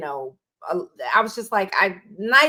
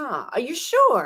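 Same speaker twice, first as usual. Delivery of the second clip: put-on heavy Jamaican accent; 3 semitones higher than usual. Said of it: "He has a heavy Jamaican accent".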